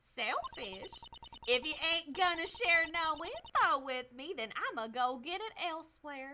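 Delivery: put-on rural Southern country accent. Voicing a game character who refuses to tell what she saw: country accent. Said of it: "I'm definitely giving her a country accent".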